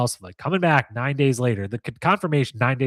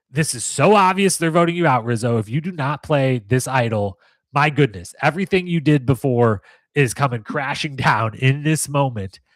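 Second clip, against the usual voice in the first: ordinary talk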